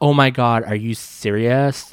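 loud, put-on California Valley girl accent. Retelling what an older lady said to them, in a valley california accent. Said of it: "she had this like Valley California accent".

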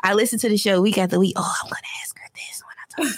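fast, hushed whisper. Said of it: "I'm like".

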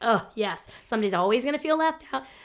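ordinary delivery

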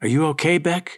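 soft, quiet whispering. Emma, having come up behind Becca, asking her a question, whispered. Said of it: "whispered Emma".

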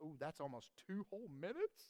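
gently sarcastic, swooping sing-song, playfully impressed. Assigning daily reading homework, joking afterwards: put-on sarcasm, a little. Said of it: "I'm being a little sarcastic".

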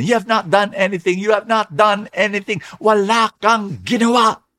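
put-on, high, screamed cry, over and over. Retelling how a man at an empty church altar cried out: screaming at God. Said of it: "and then he screamed".

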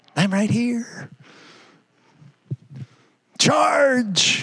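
small, slow, wicked little voice. Describing the credit card in the drawer calling out as you pass, little evil voice. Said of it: "a little evil voice calling out".

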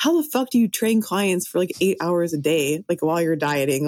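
plain

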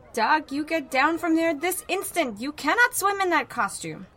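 frantic, shrill, panicked shriek, very high and loud. A mother yells at her son Doug from the side of the pool; shrill, panicked yelling. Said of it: "Her voice was shrill and panicked".

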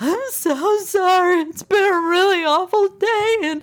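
acted bawling, high-pitched. Retelling being stopped by a man who threatened jail, acting out past sobbing. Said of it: "I'm sobbing".

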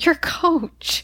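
amused, chuckling voice. Retelling his answer when the coach asks who he is, retelling a chuckled answer. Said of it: "he chuckles and he says".

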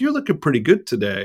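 ordinary talk, nothing marked

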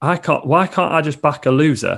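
loud, shouted outburst. Retelling losing on horses at the bookies: retelling own past shout.

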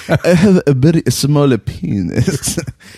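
put-on old man voice with elderly Japanese accent. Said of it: "That sounded like an old Japanese man".

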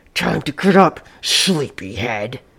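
low, labored, struggling words, throat sounding blocked. The intruder, standing on her bed, wakes the woman: speaking with great difficulty. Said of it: "He was wearing her spring party dress and the fancy blue lady's hat that she kept on the coat rack in her room. It had been her mother's. The intruder smiled and revealed several missing teeth and an enormous mouth. ... He seemed to be speaking with great difficulty, as though he had something lodge".

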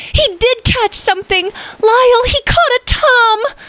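excited, thrilled voice, very high and drawn-out. One of the group flies up into the air, calling to another; excited. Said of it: "flying into the air in excitement".

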